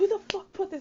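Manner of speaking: shrill, very high, loud, furious angry outburst. Describing a guy straining to pull something free, the speaker acts out Tyrell, mock-pissed off. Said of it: "Tyrell is pissed".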